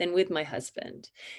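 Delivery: ordinary delivery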